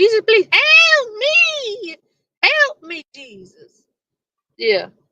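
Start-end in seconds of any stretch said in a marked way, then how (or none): 0.0-3.8 very high, very slow, drawn-out screaming. Imagining how another person would plead: imitating someone screaming for help. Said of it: "You'd be like".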